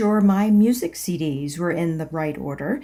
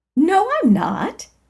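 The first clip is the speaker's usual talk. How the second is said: sunny, bright, chipper voice pitched very high; 10 semitones higher than usual. Narrator reading their own denial to the janitor, in a bright, chipper voice. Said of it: "I said in a bright, chipper voice".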